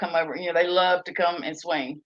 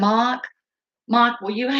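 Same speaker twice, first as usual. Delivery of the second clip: put-on pitched-up small child voice with an accent; 5 semitones higher than usual. Retelling their nephew calling out to someone: imitating the nephew's little accent. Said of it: "He talks like this".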